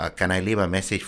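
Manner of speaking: put-on Mexican accent. Retelling asking for a guy who was off duty, in a mock mexican accent. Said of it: "I would break into this mock Mexican accent".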